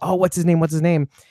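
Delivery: normal talking voice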